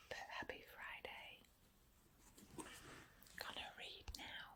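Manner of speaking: casual, chatty unvoiced stage whisper. A vlogger greeting viewers late in the evening, whispering. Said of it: "I'm whispering".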